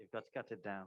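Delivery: English accent. Saying a line on request: british accent. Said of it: "say you gotta cut it down in a British accent".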